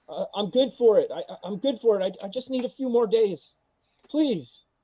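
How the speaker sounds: stammering, very high-pitched, loud, groveling begging tone. Voicing a commoner who starts groveling where everyone can hear: groveling plea. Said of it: "the commoner he starts groveling".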